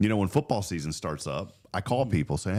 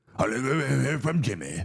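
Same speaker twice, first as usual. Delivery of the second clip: put-on crotchety eighty-year-old man voice, grumbling bark; 5 semitones higher than usual. Imitating someone who complains a friend never calls: mock eighty-year-old barking complaint. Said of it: "if I was, like, eighty years old and I was barking about somebody".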